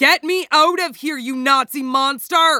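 loud, high, full bellowed shout. Narrator reads Tony after he pulls his oxygen mask down: bellowing. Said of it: "Then he bellows".

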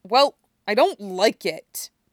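growling snarl. Narrating a girl's sharp reply in a story, snarling. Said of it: "she snarls".

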